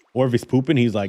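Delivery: ordinary delivery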